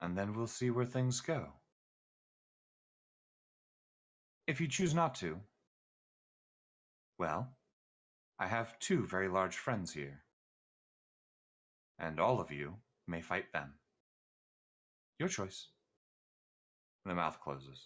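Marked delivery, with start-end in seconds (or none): 0.0-15.7 matronly woman's voice through a demon, lower. Voicing a matron whose voice speaks through a tiny demon: female voice from a demon's mouth. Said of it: "a female voice comes out instead".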